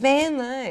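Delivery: put-on derisive, making-fun tone, high-pitched. Retelling how the other speaker made fun of the couple: mocking imitation. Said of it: "making fun of that".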